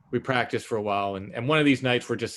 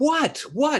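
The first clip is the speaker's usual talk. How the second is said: very high, frantic, freaked-out alarm; 4 dB louder than usual. Retelling a woman screaming and pointing, acting out their own freaking out. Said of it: "I'm like completely freaking out".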